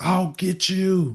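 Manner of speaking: high, shrieked, screamed-out, menacing voice. Game master voices the lady screaming after a player's character flies away: screaming threat. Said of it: "she just like screams out".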